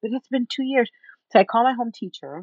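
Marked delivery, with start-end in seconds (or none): 0.0-0.9 mock breathless, heaving, hyperventilating, gasping disbelief. Speaker retells their own reaction after he leaves, acting out hyperventilating. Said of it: "I am hyperventilating".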